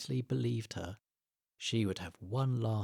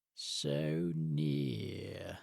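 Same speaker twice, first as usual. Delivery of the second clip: slow weaselly sneering voice, lower; 5 semitones lower than usual. Reading a story aloud, a creature taunts two young animals: sneering, slow weaselly voice. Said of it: "sneered a slow, weaselly voice".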